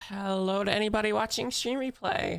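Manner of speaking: voice breaks and cracks partway through. Greeting viewers at the very start of a stream video, voice cracking. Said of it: "I voice cracked right at the start".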